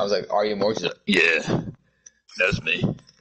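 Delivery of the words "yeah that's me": very deep, low-pitched voice. Retelling someone's answer when asked if they're Morgs, in a very deep voice. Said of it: "In a very deep voice".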